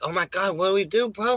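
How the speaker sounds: panicky, frantic voice. Retelling a friend's words while a fight broke out: imitating Lewis panicking. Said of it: "He was all panicking".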